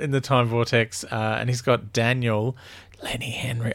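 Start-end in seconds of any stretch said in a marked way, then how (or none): 3.0-3.7 whispered, quieter. Recapping an episode, naming the actor on board: whispering a name. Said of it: "I've got to stop whispering Lenny Henry".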